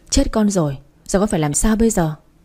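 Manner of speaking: usual speaking voice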